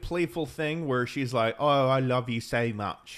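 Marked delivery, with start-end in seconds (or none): 1.6-3.2 slow, clumsy, fake British accent. Retelling an actress's playful line in a movie: imitating a bad British accent. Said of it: "I don't know what that British thing was".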